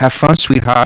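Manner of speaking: smiling while speaking. Game master voicing a wizard girl waving before she teleports away, said with a smile. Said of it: "smiles, and says".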